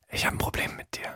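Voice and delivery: very quiet, hushed whisper. Acting out a whispered argument, whispered. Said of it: "Das ist flüsterndes Streiten".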